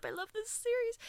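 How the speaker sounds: high, choked-up voice. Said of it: "I'm getting choked up".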